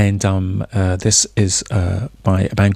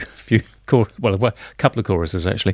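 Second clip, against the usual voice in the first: giggly, can't stop laughing through the words. Introducing a track that was just played, laughing while talking. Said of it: "I can't stop laughing".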